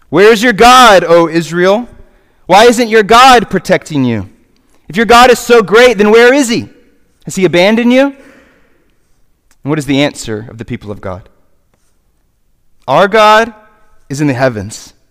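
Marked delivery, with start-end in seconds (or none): 0.1-8.0 put-on, mocking, taunting voice. The speaker voices the enemies of the people of God taunting them, mock-taunting voice. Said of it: "Do you hear the mocking voice".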